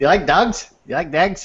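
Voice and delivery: put-on thick Irish accent, barely intelligible. Imitating a film character's hard-to-understand accent. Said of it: "the way he speaks".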